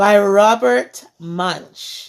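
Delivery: plain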